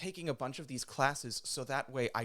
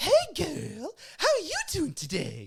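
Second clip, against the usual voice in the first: exaggerated, shrill, swooping, high, sing-song stage voice; 8 dB louder than usual. Describing Lady Bunny's ridiculous voice, done in Lady Bunny stage voice. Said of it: "this fucking ridiculous ass voice ... That's Lady Bunny's like stage voice".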